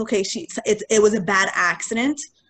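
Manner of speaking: ordinary delivery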